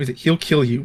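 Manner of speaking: acted very serious, stern voice. Retelling a character who turns serious again, retelling a stern warning. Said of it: "Very serious".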